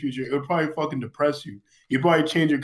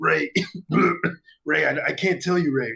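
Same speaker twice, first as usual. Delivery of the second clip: put-on drunk voice, burping. Acting out a future self who cannot explain: drunk and burping future self. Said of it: "he has, like, the look of the alcohol, he's burping".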